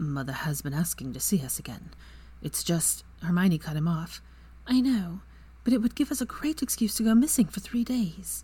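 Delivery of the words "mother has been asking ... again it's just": quiet, noticeably quieter. Once his breathing settles, Draco answers Hermione, said quietly. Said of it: "he said quietly".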